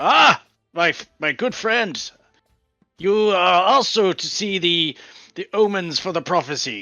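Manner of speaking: very excited. Voicing a character who hears about omens at the bar: very excited. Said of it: "he gets sort of very excited".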